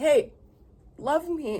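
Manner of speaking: high, yelling, demanding needy dog voice. Speaker voices their dog, in trouble for eating cat food; voicing the dog's yelling. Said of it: "Now he's yelling".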